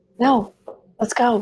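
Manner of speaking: whispering. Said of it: "I'm, like, whispering".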